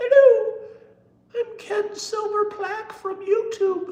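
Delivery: tiny, very high, loud, drawn-out squeaky voice. Imagining a small YouTube plaque speaking, in a very high-pitched voice. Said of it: "have a very high pitched voice".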